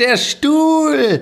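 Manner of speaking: very high, slow, drawn-out exclamation.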